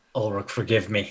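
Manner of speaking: muttered under breath. Voicing a character about to strike his beloved auntie: said under his breath. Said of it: "under his breath, you hear him say".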